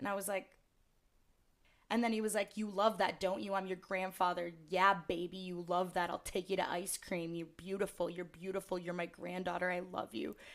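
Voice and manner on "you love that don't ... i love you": aggressive, pushy manner of talking. Retelling what a stranger kept saying, imitating an aggressive stranger. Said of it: "it got so aggressive".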